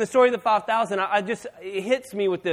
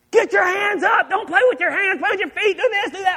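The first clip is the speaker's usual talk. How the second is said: shrill, very high-pitched screaming; 11 semitones higher, 3 dB louder than usual. Sitting in the crowd at the boys' game, retelling screaming the whole time. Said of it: "I'm screaming the whole time".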